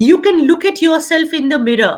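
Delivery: normal talking voice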